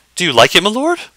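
very high-pitched, anxious, fretful voice. A man who has handed his lord a warm roll, asking anxiously. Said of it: "He asks anxiously".

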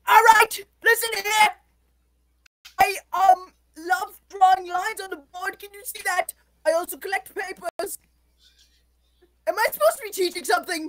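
mild hollering yell in a teacher voice. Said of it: "He's so loud".

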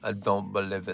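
put-on Russian accent, very low and quiet. Quoting a russian friend's catchphrase, doing the russian friend's accent. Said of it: "That's what my Russian friend used to always say".

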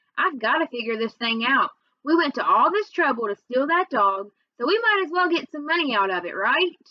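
usual speaking voice

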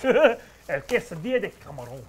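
loud, put-on Italian Mexican gangster accent. Trying out a food order, in an Italian Mexican gangster accent. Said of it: "I sound like an Italian Mexican gangster".

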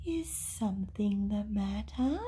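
gentle soft voice. Narrator reads an unseen voice asking hurt Toto: soft voice. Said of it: "A soft voice said".

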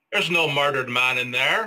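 put-on 1940s-style old-time Irish policeman accent. A voice actor demonstrates a radio play character: 1940s irish cop accent. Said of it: "a typical 1940s Irish cop".

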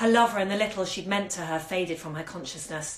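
plain

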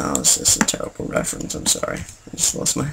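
embarrassed, very quiet, low, creaky mumble.

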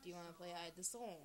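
ordinary delivery

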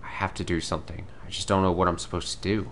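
plain

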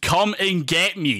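full scream, slow and stretched out. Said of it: "He literally screamed".

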